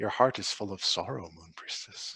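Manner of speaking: gentle, soft, hushed whisper, close in. Game master voicing a mermaid girl speaking to a sleeping character, whispering. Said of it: "she whispers to you".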